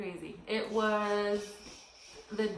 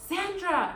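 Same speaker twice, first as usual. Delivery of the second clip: shouting. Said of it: "he yells".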